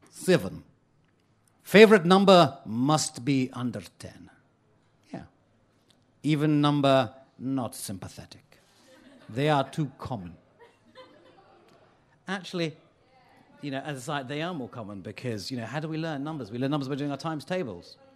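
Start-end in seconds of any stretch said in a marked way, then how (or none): 0.1-10.3 mock, mangled, exaggerated Hungarian accent. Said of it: "apologies for my Hungarian accent".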